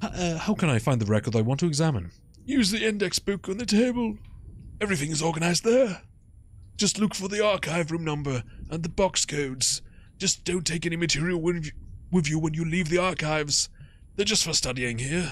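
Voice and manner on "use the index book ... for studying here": put-on old man voice, higher pitched. Voicing the archive attendant in a game, answering a question, in an old man voice. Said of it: "which means I need to do an old guy voice".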